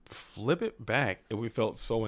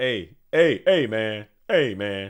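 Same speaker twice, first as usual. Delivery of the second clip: very loud, very slow, booming seventies beat-cop swagger; 9 dB louder than usual. Saying what he would have done, showing off his shark voice. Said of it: "That's my shark voice".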